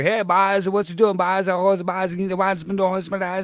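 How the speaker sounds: put-on Newfoundland (Newfie) accent. Giving an example of regional Canadian dialects: imitating a Newfoundland accent. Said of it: "And then we got the newfies here".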